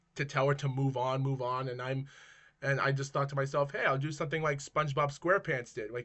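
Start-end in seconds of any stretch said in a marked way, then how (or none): none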